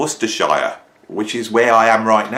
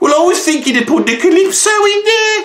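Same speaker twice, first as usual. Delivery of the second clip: put-on loud, high-pitched British accent; 6 dB louder than usual. Retelling a conversation, the speaker voices Bill's reply in a put-on UK accent. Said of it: "what was that accent?".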